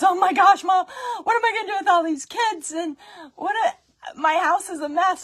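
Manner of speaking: put-on, very loud, high sobbing wail. Retelling a neighbour's panicked phone call: imitating someone bawling. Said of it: "She calls me bawling".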